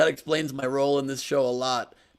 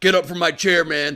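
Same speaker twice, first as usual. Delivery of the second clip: put-on loud, threatening, intimidating tough-guy voice; 3 semitones higher, 6 dB louder than usual. Retelling a wrestler pretending to scare someone at breakfast: Tony Atlas impression, pretending to scare. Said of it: "scare Dan Ahdoot".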